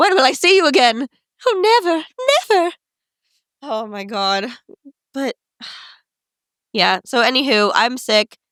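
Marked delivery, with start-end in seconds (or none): 0.0-2.7 quick, high put-on transatlantic accent. Joking with a partner about getting sick, answering in a transatlantic accent. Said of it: "are you saying it in a transatlantic accent?".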